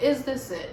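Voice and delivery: exasperated outburst.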